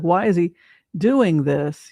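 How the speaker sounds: usual speaking voice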